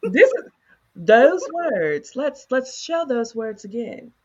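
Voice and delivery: high, loud, sassy attitude. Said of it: "this is what she said to me".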